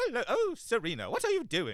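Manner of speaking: put-on very high, swooping, sing-song British accent. Describing a cartoon cat's odd accent, imitating Luna's accent. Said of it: "I don't know what her accent is. It might just be British".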